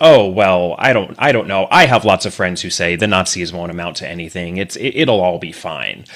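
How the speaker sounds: ordinary talk, nothing marked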